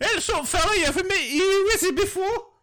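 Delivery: put-on London accent. Joining a bit about a wizard greeting someone: london accent. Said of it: "in a London accent".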